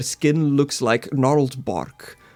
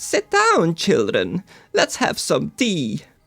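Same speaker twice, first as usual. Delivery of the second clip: put-on raspy old-lady voice, crunching-leaves texture, swooping pitch; 3 semitones higher than usual. Storyteller voices the elderly lady who has just opened the door: crunching-leaves voice. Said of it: "a voice that sounds like crunching leaves".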